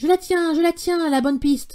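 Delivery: very loud, high-pitched barking dog voice. Narrator reading the dog's line in a story, barking very loudly. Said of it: "dit-il en aboyant très fort".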